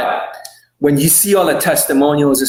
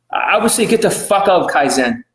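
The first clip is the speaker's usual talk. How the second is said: usual speaking voice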